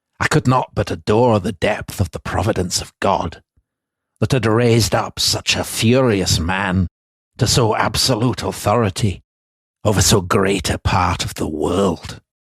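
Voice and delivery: assumed Scottish accent held throughout. Reading a passage aloud as an impression of a Scotsman: imitated Scottish accent. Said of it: "my magnificent impression of a Scotsman".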